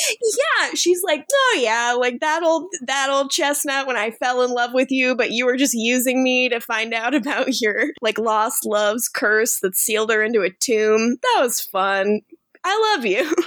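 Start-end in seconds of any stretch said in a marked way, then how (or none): none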